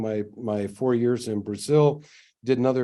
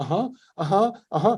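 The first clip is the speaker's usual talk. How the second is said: put-on high, childlike little-kid voice, eager uh-huhs; 8 semitones higher than usual. Imitating a man on old recordings who sounds like a little kid: little kid voice. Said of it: "this guy who sounds like a little kid".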